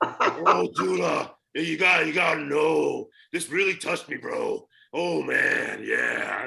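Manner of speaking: gruff, dragged-out tough voice. Retelling a tough friend's tearful call: macho Randy Savage voice. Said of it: "like macho Randy Man Savage".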